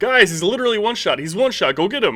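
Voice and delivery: very loud, very high, urgent callout. Showing how the microphone sounds with a louder voice: a little louder. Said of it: "get a little bit louder again".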